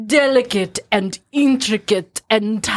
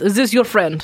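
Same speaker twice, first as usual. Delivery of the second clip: normal talking voice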